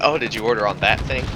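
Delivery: plain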